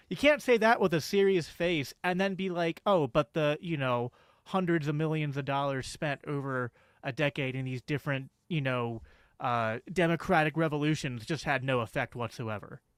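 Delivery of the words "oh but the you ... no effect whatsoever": ordinary talk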